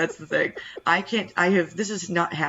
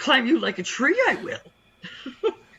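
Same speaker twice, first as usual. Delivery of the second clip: high, swooping, swinging little alien voice; 8 semitones higher than usual. Told to do more of the Yoda voice, improvising Yoda lines: Yoda voice. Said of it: "do a little more of the Yoda voice".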